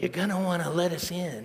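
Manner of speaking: play-acted eerie, creepy voice. Retelling a voice at the front gate buzzer at night: Pedro's creepy voice. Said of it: "in a creepy voice, just like that".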